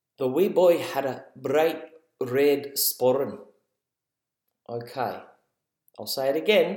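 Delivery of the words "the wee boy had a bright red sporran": amateur, put-on Scottish accent. Saying a phrase for people in the car to guess the accent: put-on Scottish accent. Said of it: "what accent i was putting on there".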